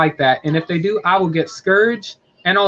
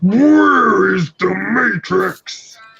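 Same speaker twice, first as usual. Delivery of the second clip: dark-hero rasp, very slow, rough and drawn out; 4 semitones higher, 4 dB louder than usual. Showing how a character sounds: Nemesis Prime Batman-like voice. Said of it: "he has that Batman like".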